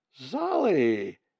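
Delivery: startled, loud cry with stretched, drawn-out word. Seeing a young bird leap from the ledge into space; exclaiming. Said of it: "Molly exclaimed".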